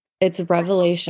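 ordinary delivery

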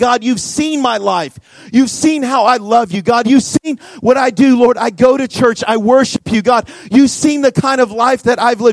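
acted-out, impassioned, tearful crying out. Retelling a man's tearful prayer to God: retelling crying out to God. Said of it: "He's crying out to God saying".

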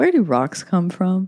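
straight, dry, deadpan delivery. Recounting walking by the rivers on a teenage date: retelling a deadpan question. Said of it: "deadpan looked at him".

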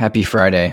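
deadpan, flat, unenthused, zero excitement. Echoing a friday greeting, flat and unexcited. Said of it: "Don't sound so excited".

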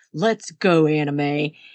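booming, loud, deep-voiced call. Retelling how he grabbed her arm and dragged her out of the casino: imitating his loud deep voice. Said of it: "says really loud in his deep voice".

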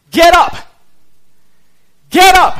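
very high, loud, commanding shout. Preaching that God calls the defeated to rise: shouting as God. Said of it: "And he shouts us, uh, at us".

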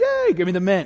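high, thrilled, eager little cheer. Describing a coin trick, voicing those who got the coin from behind their ear: mimicking excited reaction. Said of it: "they were all excited".

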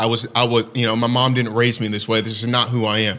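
ordinary delivery

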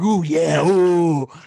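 guttural, throat-deep, almost creepy voice. Describing a podcast host's voice, imitating Ed Mylett: guttural creepy impression. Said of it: "really guttural, almost, like, creepy".

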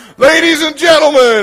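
very loud, high-pitched screamed delivery. Recalling jumping into the room as a child for attention, retelling a childhood scream. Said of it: "I would scream right before I jump".

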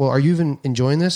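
ordinary talk, nothing marked

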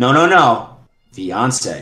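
mock-stern, put-on stern tone. Retelling how people correct her about her fiancé, mock-stern correction. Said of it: "very stern".

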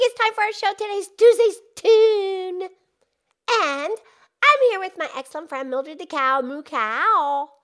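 put-on pig character voice. Opening a show in character, introducing a friend: Pinky the Pig voice. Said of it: "it's me, it's Pinky the Pig".

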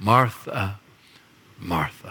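tender, deeply loving tone. A speaker quotes Jesus addressing Martha: acting out a loving tone. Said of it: "Can you hear the love in his voice?".

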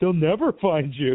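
playful mock yelling.

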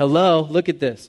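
put-on sarcastic tone. Voicing the psalm's poet about the calf worship: imitating a sarcastic poet. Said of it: "can you hear the sarcasm there?".

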